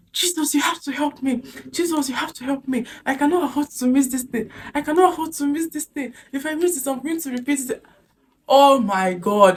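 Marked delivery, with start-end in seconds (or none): 0.2-7.9 put-on high, desperate pleading shout. Speaker retells bursting into tears on a straight road: retelling a shout to Jesus. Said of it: "I was shouting".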